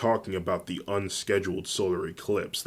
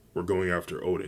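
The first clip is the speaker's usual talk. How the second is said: plain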